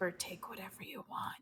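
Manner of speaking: barely audible, hushed, very quiet whisper. Leaning over to Turk in a general goods store; whispering. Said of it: "to Turk and just whisper".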